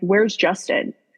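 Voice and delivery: put-on panicked tone. Retelling being rushed into hospital by nurses, imitating own panicked question. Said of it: "and I'm panicking".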